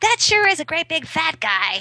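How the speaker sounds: mock, loud, carrying, very high kid voice. Parent retells what their son said in a restaurant, imitating his very unquiet voice. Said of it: "in his very unquiet voice".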